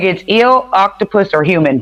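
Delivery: ordinary delivery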